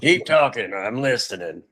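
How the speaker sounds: very stern, severe, hard-edged movie-style delivery. Retelling a phone call, quoting the man's reply: imitating his stern movie voice. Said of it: "very, very stern".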